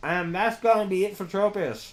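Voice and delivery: muffled voice, talking through a mouthful of food. Commentating a battle while eating a cookie, talking with mouth full. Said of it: "Are you eating something? It sounds like you're muffled".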